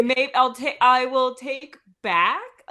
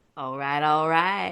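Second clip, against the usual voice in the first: stretched-out, drawling film-star voice; 9 semitones lower than usual. Saying a short line the way the other speaker hears it: Matthew McConaughey voice. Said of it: "in his voice".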